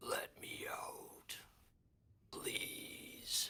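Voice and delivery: deep, watery, gurgling inhuman whisper, very slow, drawn out. Voicing a trapped being heard in players' minds: deep gurgling non-human voice. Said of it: "deep, uh, non-human voice sounding almost like it's in the water, it's gurgling".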